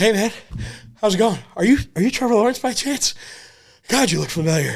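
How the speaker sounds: mock winded huffing and panting, very high. Retelling sitting down beside a man at a bar: retelling being out of breath. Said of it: "I'm huffing and puffing".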